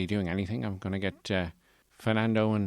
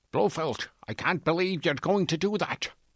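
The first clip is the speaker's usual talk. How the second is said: put-on Scottish film-spy voice, pitched up; 8 semitones higher than usual. Asked for an impression, speak to Blofeld as James Bond in a Sean Connery impression. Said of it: "here's my Sean Connery impression".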